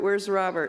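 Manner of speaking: ordinary talk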